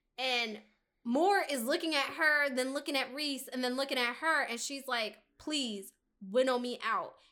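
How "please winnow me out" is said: put-on voice cracking and breaking up. Retelling a character's plea to be taken away: imitating a breaking voice. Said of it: "her voice is breaking".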